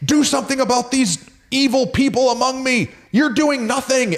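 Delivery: put-on yelling. Retelling the prophet Habakkuk's complaint to God: imitating Habakkuk shouting. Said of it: "he's, like, shouting out to God".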